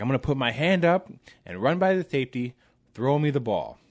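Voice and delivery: high, irate, angry voice. Retelling what a player yelled at the speaker in the huddle, retelling an irate yell. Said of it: "he is irate, you know, and he's he's yelling".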